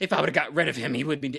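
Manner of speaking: imitated angry woman voice, ranting. Retelling a movie scene where a foster mother blames a boy: imitating an angry woman. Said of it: "she's very angry at".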